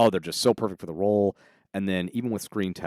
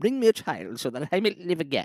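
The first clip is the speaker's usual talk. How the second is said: put-on posh British accent, high and swooping; 9 semitones higher than usual. Imagining the king unveiling his portrait: King Charles posh British accent. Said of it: "his posh British accent".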